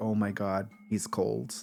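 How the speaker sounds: acted disgusted murmur, low and hushed under the breath. Recounting a character touching a cold shoulder, imitating disgust. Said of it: "is so grossed out".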